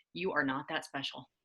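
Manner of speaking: low, quiet, flat, expressionless put-on deadpan. Quoting what a physician friend said during a talk about confidence: retelling a deadpan remark. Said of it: "so just deadpan said".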